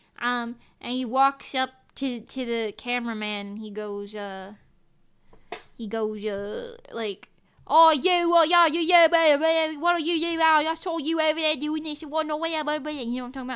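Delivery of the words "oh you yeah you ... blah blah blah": put-on loud, fast, ranting yell in heavy British accent. Retelling a man walking up to a cameraman; imitating a heavy-accent yell. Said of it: "yelling something in a very heavy accent".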